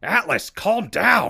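urgent high, slow, loud shout.

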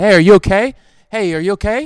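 very loud, shrill, high-pitched yell. Stuck at home in quarantine, speaker retells calling across the street: retelling yelling at a kid. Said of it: "I start yelling at the kid".

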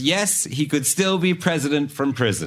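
normal talking voice

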